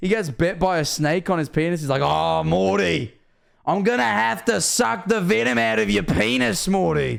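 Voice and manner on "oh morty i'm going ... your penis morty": put-on rough, creaky, high, slow Australian accent. Quoting a cartoon scene: Australian Rick voice. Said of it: "that's Australian Rick from Bushworld Adventures".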